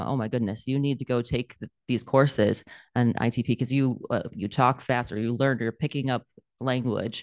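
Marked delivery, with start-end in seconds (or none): none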